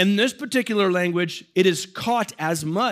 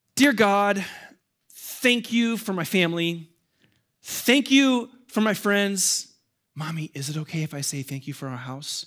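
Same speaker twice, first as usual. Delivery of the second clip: put-on small-child voice, slower. Father retelling his five-year-old daughter's bedtime prayer, imitating Mila praying. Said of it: "my 5-year-old daughter's prayer sounds like this".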